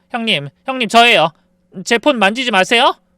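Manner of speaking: put-on hurried, frantic voice. Retelling a sudden phone call from a sister-in-law: imitating an urgent, hurried voice. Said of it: "다급한 목소리로".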